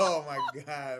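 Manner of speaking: slow, laughing, disbelieving delivery.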